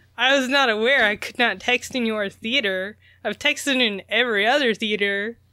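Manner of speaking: ordinary delivery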